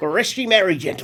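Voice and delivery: put-on Cockney British accent, attempted Australian sounding Cockney. Showing how an attempted Australian accent always comes out: failed Australian accent, sounds Cockney. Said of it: "Every time I try to do Australian".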